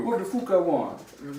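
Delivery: bad put-on Irish accent, high and slow. Imitating what a fighter's contract would say: bad Irish accent. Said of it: "I can't do an Irish accent".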